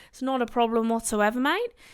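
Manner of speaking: patchy Australian accent slipping in and out. Speaker practising accents, telling listeners it's no problem: slightly ropey australian accent. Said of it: "this is my slightly ropey Australian accent".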